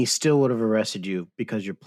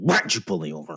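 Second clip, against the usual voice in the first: heated, confrontational, hot-tempered delivery. Joking about answering a police officer: mock heated retort. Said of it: "I usually say very heated".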